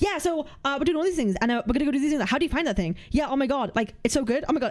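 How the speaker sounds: hopped-up, racing, rapid rattled-off babble. Impersonating a guy who talks really weirdly, imitating someone talking fast. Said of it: "He's like speaking really quickly".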